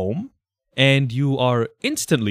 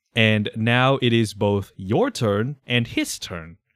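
normal talking voice

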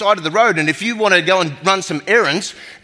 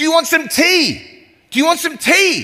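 acted, friendly, high shout as if from afar; 9 semitones higher than usual. Retelling a man calling to him from far away in Cairo, imitating his yelling. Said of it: "this guy's yelling out at me".

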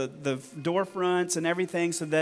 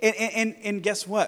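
ordinary talk

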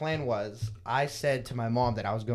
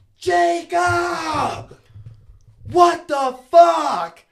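very high, very loud, very slow drawn-out scream; 13 dB louder than usual. Telling how mom came home and found it, retelling a scream. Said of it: "she screams".

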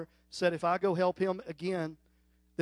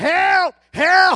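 mock yelling, higher and louder; 11 semitones higher, 11 dB louder than usual. Retelling a wild story to friends, acting out what a would-be robber cried out. Imitating someone yelling. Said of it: "And he's yelling".

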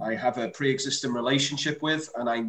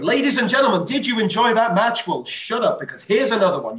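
short, loud, punchy announcer voice; 9 semitones higher, 7 dB louder than usual. Explaining how they announce at AWR, demonstrating a loud punchy announcer voice. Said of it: "speaking loudly with brevity and with punch".

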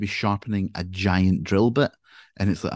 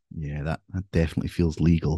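put-on mutter, much lower pitch; 4 semitones lower than usual. Retelling what she muttered while watching Jason in chains on screen, imitating a mutter. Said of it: "she just muttered".

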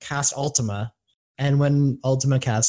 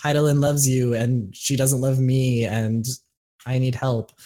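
normal talking voice

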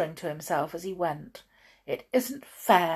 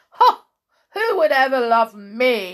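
loud laughing high outcry, "me" stretched long; 5 semitones higher, 10 dB louder than usual. The blind man answers someone who wishes to find him a friend, laughing loudly. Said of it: "The blind man laughed loudly".

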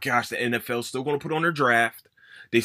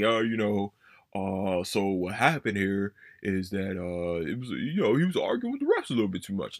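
put-on flat monotone, lower and quieter; 5 semitones lower, 3 dB quieter than usual. Mocking how he sounded at the 2K tournament, imitating a monotone voice. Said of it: "you're just talking like a monotone voice".

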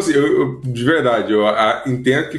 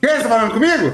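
overloud, very high-pitched talking; 9 semitones higher than usual. Describing a woman who talks with headphones on, the speaker imitates her loud voice. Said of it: "um tom de voz bem mais alto do que normal".

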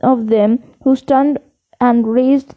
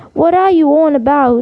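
ordinary delivery

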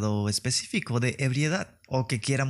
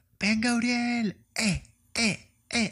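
put-on very high, drawn-out tipsy cheering holler; 11 semitones higher than usual. Retelling a party story, imitating a drunk aunt shouting encouragement. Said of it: "Y empieza a gritar".

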